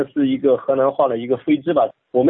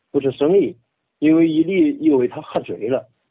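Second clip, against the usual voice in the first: reading aloud in Henan dialect. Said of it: "用河南话".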